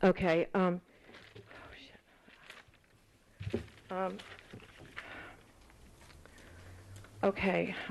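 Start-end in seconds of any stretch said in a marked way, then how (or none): 1.4-7.7 nervous, flustered voice, said more quietly. Searching for a missing page while speaking to a chair: nervous. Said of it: "I'm nervous".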